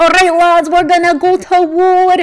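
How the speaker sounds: put-on Scottish accent, pitched high. Recalling their own earlier line, in a put-on scottish accent. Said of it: "I think I did the Scottish one".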